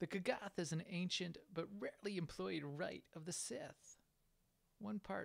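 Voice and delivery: radio countdown host, DJ-style read. Reading a game's codex entry aloud while playing, Casey Kasem voice. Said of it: "I don't know why I'm using this voice".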